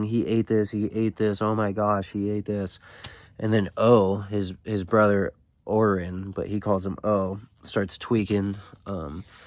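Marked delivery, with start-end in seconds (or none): none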